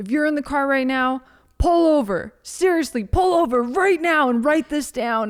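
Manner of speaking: screamed at full force, loud and high-pitched. Quoting what a man said on a cassette, imitating someone screaming. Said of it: "he would be screaming at me".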